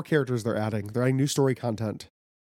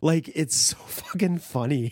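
plain

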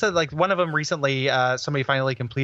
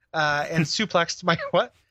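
ordinary talk, nothing marked

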